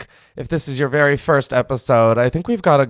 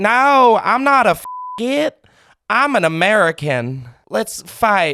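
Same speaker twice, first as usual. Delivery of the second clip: very slow, high-pitched put-on southern American accent; 8 semitones higher than usual. On a call-in show, the host jokes about blending in: southern accent. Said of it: "trying to blend in".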